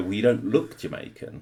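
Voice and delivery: plain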